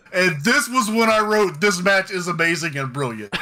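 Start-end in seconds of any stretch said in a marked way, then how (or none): none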